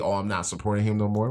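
ordinary delivery

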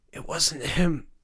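raspy, scraping, rasping delivery. Narrator reading a character's line in a scene with a constable, rasping voice. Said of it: "said a rasping voice".

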